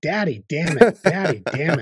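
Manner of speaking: put-on little child's yell. Retelling a daughter running around the house: imitating daughter yelling. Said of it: "ran around the house yelling".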